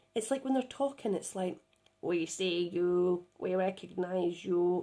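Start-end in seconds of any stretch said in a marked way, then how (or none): 2.1-4.8 very slow, flat, croaky, machine-like robot drone. Retelling how the beings talked to the speaker, in a croaky machine-like voice. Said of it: "I'm going to do another silly voice".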